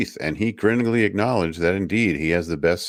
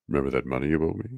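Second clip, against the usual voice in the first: pleasant, smooth-talking villain voice, low and soft; 4 semitones lower, 5 dB quieter than usual. Retelling how he talked while working on your teeth, imitating a smooth, pleasant villain. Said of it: "He's like a smooth villain".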